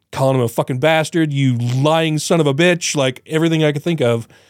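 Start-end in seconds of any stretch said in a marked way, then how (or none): 1.3-2.9 slow, drawn-out cursing, yelling. Recalling watching an interview, retelling yelling at the TV. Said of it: "I was yelling at the TV".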